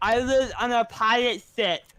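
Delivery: high, loud speech with tongue sticking out. Retelling what a new student said at lunch, imitating Jerry talking with tongue out. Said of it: "with his fucking tongue out to sound like".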